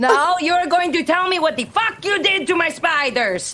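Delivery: high, furious, demanding tone.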